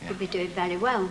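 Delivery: normal talking voice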